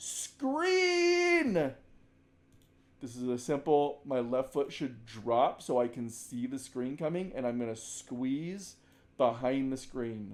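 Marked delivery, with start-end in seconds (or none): 0.0-1.7 high, loud yelled call. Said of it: "When he is yelling".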